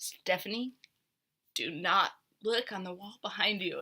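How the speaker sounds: very calm, steady, soft tone. Retelling what Brandy said to her on tuck-in duty: retelling a very calm warning. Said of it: "she said in a very calm voice".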